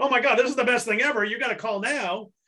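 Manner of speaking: fake gushing hype, phony over-the-top excitement. Explaining what not to sound like, the speaker demonstrates phony over-the-top excitement. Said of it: "you can't sound like".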